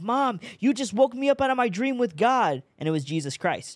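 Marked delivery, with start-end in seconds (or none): 0.0-2.6 play-acted, very high yelling outburst. Retelling yelling at mom for waking them from a dream: retelling a yell. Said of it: "I literally yelled at my mom".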